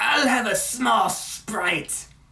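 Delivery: high, slow hiss on each S. Retelling a cartoon clip at a drive-thru, Cobra Commander voice with stressed S. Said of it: "putting so much emphasis on the S".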